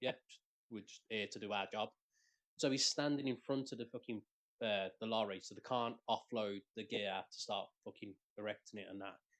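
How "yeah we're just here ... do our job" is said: normal talking voice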